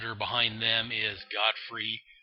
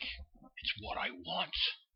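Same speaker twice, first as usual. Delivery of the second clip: weak, feeble, breathy whisper, drawn out very slowly; 8 semitones higher, 11 dB quieter than usual. Retelling a comic scene where the villain turns: feeble Darkseid voice. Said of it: "I can't do the Darkseid voice as well as".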